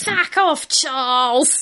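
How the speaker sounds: rough Cockney accent, pitched a bit high. Talking about the Queen doing a Danny Dyer accent, a speaker does a Danny Dyer impression. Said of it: "your Danny Dyer impression is fucking spot on".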